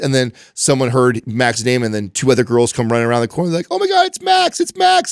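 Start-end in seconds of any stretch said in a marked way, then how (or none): 3.7-5.1 very high, rough, drawn-out, squealing excited yelling. Retelling how girls at school spotted Max: imitating girls yelling. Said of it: "they're all yelling like this".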